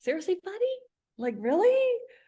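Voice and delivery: play-acted laughing disbelief, very high and swooping. Retelling a reply to a man's joke: retelling own laughing reply. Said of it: "I look at him laughing, going".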